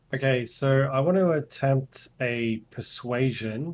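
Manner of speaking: ordinary delivery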